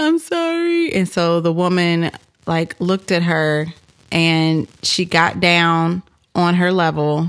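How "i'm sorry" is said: very high, weepy child's crying voice, acted out. Retelling how Megan apologized to a woman whose car she scratched: imitating Megan crying. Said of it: "she's crying".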